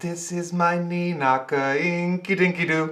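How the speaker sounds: put-on German accent, sweet old man voice, very high. Imagining how he would talk when he takes the children, in a sweet old german man voice. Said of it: "like a sweet old German man, German accent".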